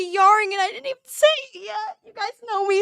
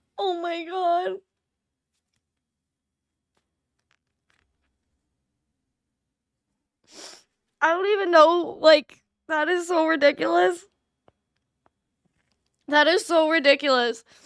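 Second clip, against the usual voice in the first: choked up, fighting back tears; 3 semitones lower than usual. Reacting live to kind messages from viewers, fighting back tears. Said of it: "I try not to cry on streams".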